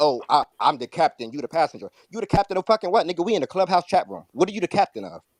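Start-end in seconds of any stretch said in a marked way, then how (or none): 0.0-1.9 mock high and mighty, superior tone. Mocking someone in the chat room: mocking a high and mighty tone. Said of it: "So all this high and mighty".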